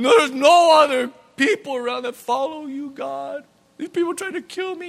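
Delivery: high, whiny, complaining voice.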